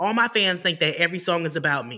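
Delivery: ordinary delivery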